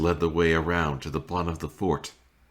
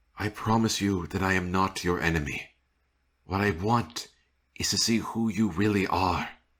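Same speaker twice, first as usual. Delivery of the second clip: calm, composed, steady, even tone; 3 semitones higher than usual. Sir Robert speaks to his squire Will: calm voice. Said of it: "My son loved to sleep outdoors, / [name] frowned as he paced near his tent. / [name] cleaned his squire's wounds, / He thought his voice was calm".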